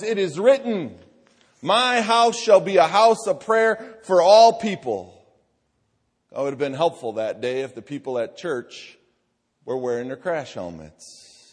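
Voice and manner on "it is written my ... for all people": loud, high, drawn-out shout at top of lungs. Retelling a story about a day at church, imitating someone shouting. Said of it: "shouting at the top of his lungs".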